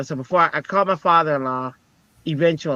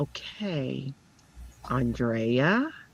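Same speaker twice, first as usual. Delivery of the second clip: calm, soft, even counselor-like tone; 8 dB quieter than usual. Retelling what a college counselor said: imitating Sandy's calm voice. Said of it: "this is how she talks".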